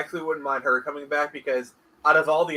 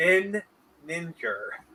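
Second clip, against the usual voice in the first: each syllable of nin ninja stretched, very slow; 3 semitones higher than usual. Saying a name so that Jay will realize why, very slowly. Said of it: "I'm going to say this very slowly".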